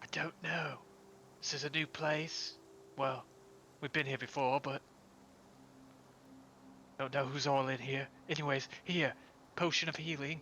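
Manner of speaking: hushed whisper. Answering a companion who asks why they are whispering, whispering. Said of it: "Why are we whispering?".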